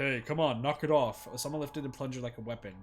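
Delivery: ordinary delivery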